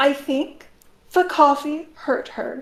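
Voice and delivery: very calm, with the upset held in. Retelling how a mother answered after the coffee hurt her: imitating calm, held-back upset. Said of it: "very calmly, but like trying to hold back".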